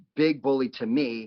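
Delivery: ordinary talk, nothing marked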